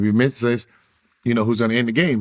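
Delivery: ordinary talk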